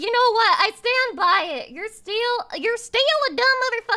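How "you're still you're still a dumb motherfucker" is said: sudden switch into pitched-up southern US accent. Reacting to a video, suddenly slipping into a southern accent. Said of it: "I went southern there for a second".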